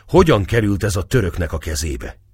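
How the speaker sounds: ordinary delivery, nothing marked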